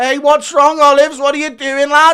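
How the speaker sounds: very high-pitched, very loud jeering, taunting tone. Acting out a predicted fight, Paddy Pimblett taunting his opponent: imitating Paddy Pimblett taunting. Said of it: "laughing and talking shit the entire time".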